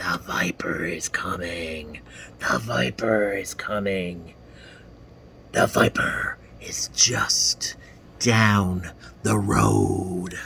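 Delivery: eerie, ghostly, spooky, low hushed voice. Narrator reads the voice on the other side of a phone call: spooky voice. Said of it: "there was a spooky voice".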